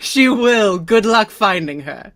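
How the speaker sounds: cackling voice. Game master voicing one of the Tempestry answering the players, cackling. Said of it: "One of the Tempestry just cackles".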